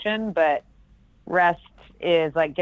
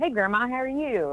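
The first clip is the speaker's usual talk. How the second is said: put-on higher-pitched Jacksonville accent; 7 semitones higher than usual. Speaker recalling phone calls with their grandma, slipping back into their Jacksonville accent. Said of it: "I would just go right back into like".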